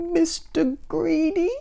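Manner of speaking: very high, tiny, frightened squeak. Narrator reading a frightened character answering a giant, squeaking. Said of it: "he squeaked".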